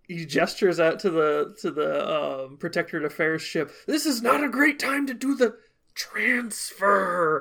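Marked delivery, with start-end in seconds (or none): 3.8-7.4 hushed whisper, much higher. A character meeting the Beluga crew near a Protectorate ship says this, whispering. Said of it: "And he whispers that again".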